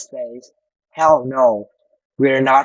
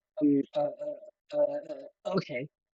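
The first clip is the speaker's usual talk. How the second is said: soft, slow, stop-and-start, unsure halting fumbling; 12 dB quieter than usual. Explaining to learners how she says okay, saying it hesitantly. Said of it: "She says it hesitantly".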